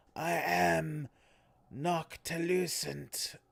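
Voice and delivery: guttural rasping monster voice, am drawn out. Narrating a second-person story as the monster speaks, guttural Noctilucent voice. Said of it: "through a voice box that seems better suited for guttural roars".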